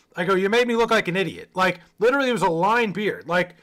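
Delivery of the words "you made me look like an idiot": ordinary talk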